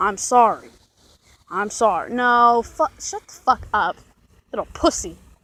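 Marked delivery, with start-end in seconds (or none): 0.0-2.1 mock, grudging, unwilling tone with attitude. Retelling how he apologized: imitating a sorry with attitude. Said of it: "He said it with an attitude".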